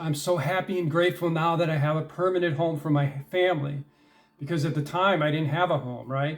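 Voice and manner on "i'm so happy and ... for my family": normal talking voice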